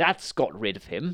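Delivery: plain reading voice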